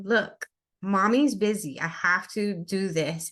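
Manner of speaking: mock, very stern, slow scolding tone. A mother retells turning to her child who wanted attention, in a put-on very stern voice. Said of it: "a very stern voice".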